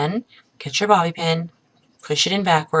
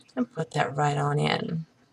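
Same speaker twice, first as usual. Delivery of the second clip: soft, much quieter voice; 3 semitones lower, 9 dB quieter than usual. Talking someone through pinning a hair twist with a bobby pin, softly spoken. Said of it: "[softly spoken]".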